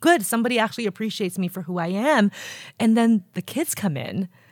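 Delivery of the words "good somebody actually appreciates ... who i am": plain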